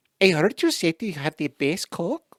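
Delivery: sweet yet menacing delivery at once. Imitating how the voice comes across: Sofia Vergara impression. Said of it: "I hear Sofia Vergara just going".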